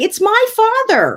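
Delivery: high, slow, indignant retorting tone.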